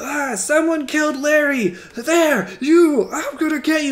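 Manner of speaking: high-pitched, shouted in-character yell. Voicing an enemy who finds his friend killed: yelling in character. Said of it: "he's yelling and he's just like".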